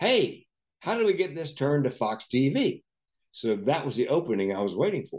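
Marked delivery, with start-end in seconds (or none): 0.0-2.8 loud, pitched-up, carrying call. Retelling a remark a man made to the whole gate: imitating a man speaking loudly. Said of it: "says loud enough for everybody in the gate area to hear".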